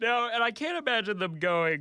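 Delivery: high, yawning speech, words pulled through yawn. Mid-conversation, yawning while talking. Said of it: "I'm yawning from all the news".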